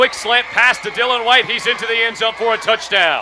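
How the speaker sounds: high, loud, yelled sports announcer call.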